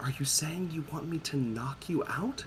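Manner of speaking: very quiet, secretive half-whisper, barely audible. Voicing Faustus leaning in to another character: conspiratorial half-whisper. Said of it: "Faustus leans in and whispers, like, conspiratorially".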